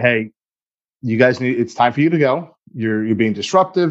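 plain

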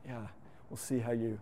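mock scornful, doubting, soft and hushed sarcastic sneer. Retelling what an influential person in the speaker's life said: mock sarcastic sneer. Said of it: "gave that sarcastic sneer comment".

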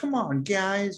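put-on high-pitched, nasal American accent. Imitating an actor's extra-nasal American accent in a film: imitating John Boyega's nasal American accent. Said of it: "There's a very, like".

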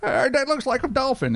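very bad fake British accent, pitched very high. Quoting someone's remark, the speaker puts on a bad british accent. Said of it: "that's my worst, best British accent I can possibly do".

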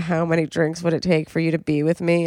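ordinary talk, nothing marked

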